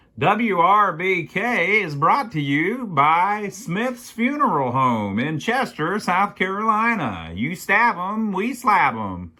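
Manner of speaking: wild radio announcer patter. Quoting a radio DJ reading a funeral home commercial, crazy radio DJ voice. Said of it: "the guy talks with a real kind of crazy voice".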